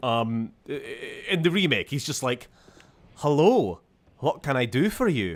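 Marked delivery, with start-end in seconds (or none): 3.2-5.4 put-on vague Scottish accent, male voice. Describing how a game character sounds in the remake, in a Wee Limmy Man remake voice. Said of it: "to just like, "Hello, I'm just like a vaguely Scottish guy".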